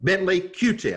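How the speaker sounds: severe, very stern delivery. Retelling the colonel's two-word answer, in a very stern voice. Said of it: "in a very stern voice".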